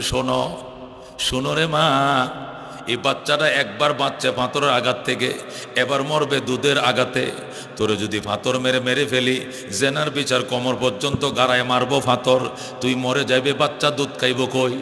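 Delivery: low, soft, gently spoken voice. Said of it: "আল্লাহ নবী কই".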